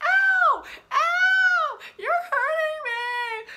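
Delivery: shrill, very loud fake screaming with long drawn-out ows. Retelling how a man in the chair started screaming, imitating fake pained screaming. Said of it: "he starts screaming".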